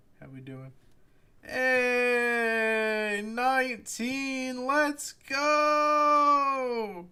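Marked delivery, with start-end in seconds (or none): 1.5-7.0 sarcastic mock excitement, very high, very slow. Reacting to nineteen viewers on the stream: sarcastic fake excitement. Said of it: "That's sarcasm if it's not obvious".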